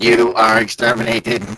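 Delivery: loud, high, mechanical robot voice. Asked by the other speaker to say it again, in a robot voice. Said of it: "I'm roboting".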